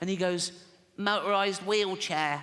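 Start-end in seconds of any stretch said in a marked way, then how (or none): 1.0-2.4 put-on little kid voice. Acting out a six-year-old answering his father's Christmas question, in Timmy voice. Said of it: "I promised Jane I wouldn't do the voice and I fucking forgot".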